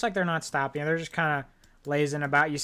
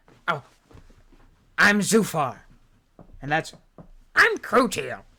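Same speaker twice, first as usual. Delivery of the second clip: put-on child voice, louder; 5 dB louder than usual. Character introducing themself and a companion to strangers, child voice. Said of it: "They're children".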